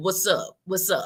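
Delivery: casual Newark New Jersey accent. Showing off own way of greeting people: Newark accent. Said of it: "I got my Newark accent".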